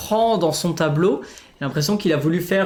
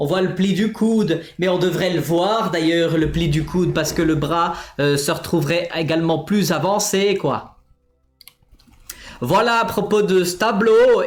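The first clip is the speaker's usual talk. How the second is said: fake Swiss accent, speaking French. Critiquing a painting before moving to the last one, put-on swiss accent. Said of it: "on va arrêter avec cet accent suisse".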